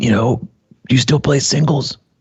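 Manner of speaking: put-on scratchy, rasping older man's tone. Retelling what an older tennis partner said: imitating an older man's raspy voice. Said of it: "real raspy voice".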